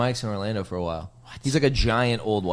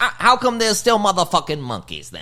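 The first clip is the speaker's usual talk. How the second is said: high, swooping stand-up delivery with wide pitch swings; 9 semitones higher than usual. Retelling a comedy bit about evolution: Katt Williams impression. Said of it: "that's a really good impression".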